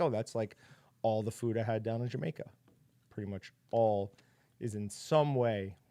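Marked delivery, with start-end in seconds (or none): none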